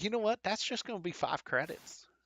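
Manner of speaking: put-on high Southern US accent. Selling the creature to the buyer, the seller names the price, southern accent. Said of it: "has a uh, southern accent".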